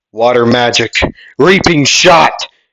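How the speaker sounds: loud shouted yell, acted out. Narrator voicing a character's line while retelling a sword battle: yelling. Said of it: "sorry about yelling".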